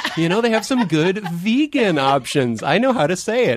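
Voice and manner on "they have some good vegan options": slow, high mom voice straining to sound tolerant. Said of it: "like somebody's mom that's trying to sound really tolerant".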